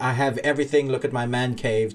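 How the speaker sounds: ordinary talk, nothing marked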